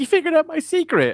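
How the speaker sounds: very cheery, sunny, very high-pitched and loud. Imagining the revealed Shadow Broker owning up to her secret: mock-cheerful Pip voice. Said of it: "very cheerily being like".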